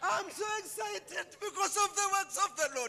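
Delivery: tearful, crying while talking. Answering someone who asks why she is crying: crying while talking. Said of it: "Why you crying, Mama?".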